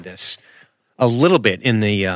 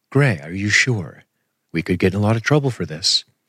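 put-on soothing android voice. Recounting a scene by speaking as STEM, soothing STEM android voice. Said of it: "in that oh so soothing android voice".

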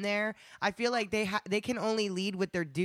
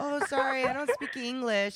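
put-on, feigned dumb, real stupid-sounding delivery; 4 semitones higher than usual. Acting out brushing off someone at a club: pretending to act real stupid. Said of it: "I'll act real stupid".

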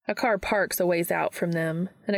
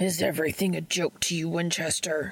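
growled voice, all smoke and gravel. Novak, slamming Dean back into the lockers, growls at him, smoky and gravelly. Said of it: "Novak growls out, all smoke and gravel".

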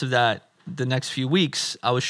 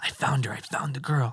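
secretive, hushed, confiding stage whisper; 5 dB quieter than usual. Retelling a friend stepping back to whisper to him: imitating a whisper. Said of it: "steps back and whispers over to me".

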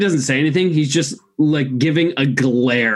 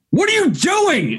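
frantic, alarmed, very high panicked shout; 13 semitones higher than usual. Voicing a panicking character who sees an ally blasted: panicked yell. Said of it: "he's gonna just yell".

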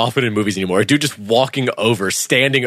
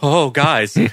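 mock frightened voice, higher; 3 semitones higher than usual. Retelling how an actor plays a character backing away, imitating a scared character. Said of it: "like he's scared".

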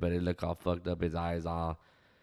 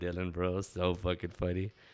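usual speaking voice

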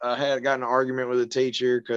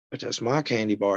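ordinary talk, nothing marked

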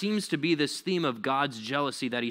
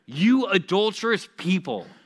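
heavy, intense delivery, loud and high; 6 semitones higher, 7 dB louder than usual. Rereading a line from James's letter aloud to the church: intense reading. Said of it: "didn't like read it as like intense".

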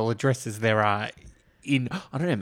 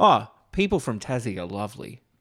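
ordinary delivery

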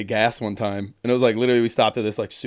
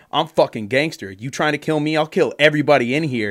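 mock hostile, angry, snapping, threatening outburst; 4 semitones higher than usual. Retelling a man snapping at the guy at the counter: retelling an angry threat. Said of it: "he starts snapping at the fucking dude at the counter like getting all angry".

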